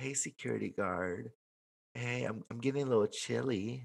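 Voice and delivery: put-on sultry, seductive flirting voice. Acting out a woman in her gown calling a security guard: acting out a flirty line. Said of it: "she's all in her gown and she's like".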